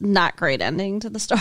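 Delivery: normal talking voice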